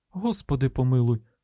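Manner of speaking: plain reading voice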